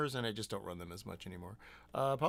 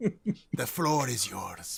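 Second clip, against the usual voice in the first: put-on Scottish accent, said louder; 2 semitones higher, 7 dB louder than usual. Handing the floor to the others: Alan Cumming voice. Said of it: "That was Alan Cumming".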